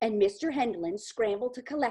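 ordinary delivery, nothing marked

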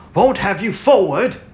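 threatening, menacing voice. Narrating a man answering a cowering man, menacing. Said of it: "said Montgomery in a menacing voice".

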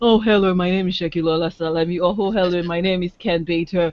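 low, flat, monotonous droning read. Showing how not to read your introduction, monotonous. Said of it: "read in a monotonous".

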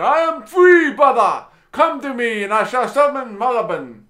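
put-on broken, high, loud child's shouting cry. Narrator voices the freed brother calling out from the smashed vial, shouting. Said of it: "the broken child shouting".

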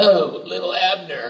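mocking cougar voice, high, slow, cooing.

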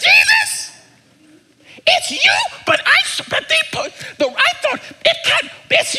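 squeaky put-on voice. Retelling a woman recognizing jesus, the speaker uses a squeaky voice. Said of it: "like squeaky voice".

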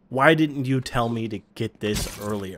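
let-down, disappointed, sorry tone. Speaker retells what someone said after trying a VR headset; mock-disappointed. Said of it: "has a disappointed voice and says".

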